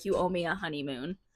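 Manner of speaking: mock sarcastic tone. Retelling a character's request for a honeymoon: imitating a sarcastic remark. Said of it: "just being, uh, like, sarcastic".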